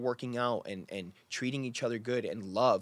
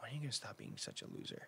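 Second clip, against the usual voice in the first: mock whisper, hushed and quietly disappointed; 14 dB quieter than usual. Retelling how a partner said a hurtful line: imitating a disappointed tone. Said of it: "just disappointed".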